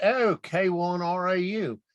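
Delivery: put-on very slow, drawn-out, high Australian accent. Retelling a radio contact's greeting, imitating an Australian accent. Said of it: "in his Australian accent".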